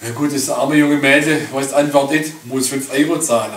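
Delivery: ordinary delivery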